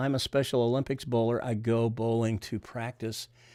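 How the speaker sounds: usual speaking voice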